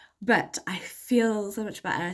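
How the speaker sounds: plain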